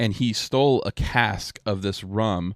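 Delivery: plain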